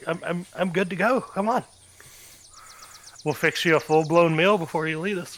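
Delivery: excited, eager, all fired up voice. Voicing a character offering a meal before setting out: excited character voice. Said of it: "like, all excited. He's like".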